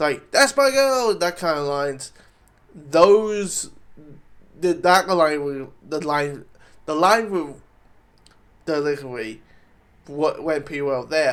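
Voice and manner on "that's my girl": mock bursting with energy, very high and loud. Giving an example of an energetic line, energetic delivery. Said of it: "very very like energetic".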